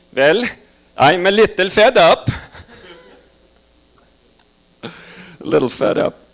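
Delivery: calm, even, level Swedish accent. Doing an impression of a Swede at the end of his rope, losing his temper. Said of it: "Here's my impression of a Swede at the end of his rope".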